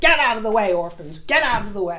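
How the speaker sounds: put-on, showy, spotlight-grabbing Broadway-style delivery. The speaker repeats his impression from the previous broadcast: Annie-audition impression. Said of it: "my little impression".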